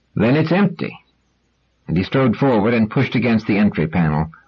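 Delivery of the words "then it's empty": rather louder, raised, higher-pitched, stated outright. Narrator reads a man's line just before he pushes open a door: rather louder voice. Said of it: "added in a rather louder voice".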